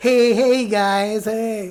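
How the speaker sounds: very slow, drawn-out put-on little-kid voice. Retelling how the other little kids greeted him: imitating a nine-year-old kid. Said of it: "Sounded like a nine-year-old Lego man".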